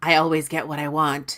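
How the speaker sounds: sultry, seductive little half-whisper. Retelling a scene where Berlane strokes Perrin's arm: seductive half-whisper as Berlane. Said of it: "all seductive and whispers".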